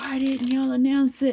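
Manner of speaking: loud, high-pitched, angry screaming rant. Retelling a man yelling at station staff over a missed bus: imitating a man screaming. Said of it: "he's just screaming".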